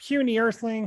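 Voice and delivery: cartoon alien character voice. Speaker trying an impression he says he can't do anymore: Marvin the Martian voice. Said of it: "I used to do a spot on Marvin".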